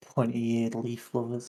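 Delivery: muttered aside, mumbled under breath. A player character in a role-play scene, muttering under breath. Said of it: "I'm gonna mutter under my breath".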